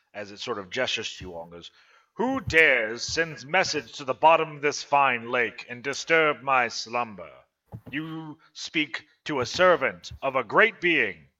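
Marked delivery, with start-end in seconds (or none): 2.2-11.1 loud, grand, kingly, regal proclamation tone. A game master voices a water elemental addressing the party, regal tone. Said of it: "you can hear a very regal tone come from this water elemental".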